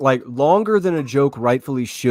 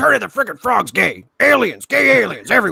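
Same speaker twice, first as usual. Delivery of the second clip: raspy, rough, high-pitched ranting; 6 semitones higher than usual. Riffing on a show intro that sounds like an old broadcast, doing an Alex Jones impression. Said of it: "Not my best Alex Jones".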